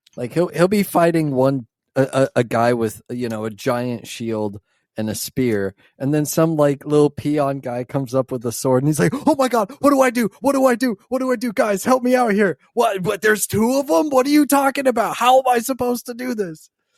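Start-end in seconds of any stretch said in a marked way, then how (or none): 9.3-16.7 acted frantic, flustered, high, panicked babbling. Describing him fighting a guy with a shield, imitating his panicked rambling. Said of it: "that was a great impression".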